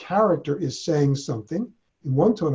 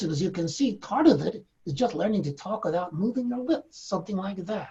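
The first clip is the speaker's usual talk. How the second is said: put-on cranky old lady voice, pitched up; 5 semitones higher, 5 dB quieter than usual. A ventriloquist demonstrates a puppet character, in Lucille Goldman puppet voice. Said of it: "a very cranky old lady who talks like this".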